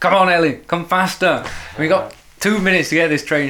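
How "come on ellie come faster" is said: shouting out loudly. Retelling hurrying Ellie to catch a train, retelling own shout. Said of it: "I was shouting at Ellie".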